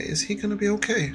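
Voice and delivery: hushed, very quiet words close to the ear. Clinging like a toddler, a character speaks into someone's ear: very quietly. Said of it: "very quietly in your ear".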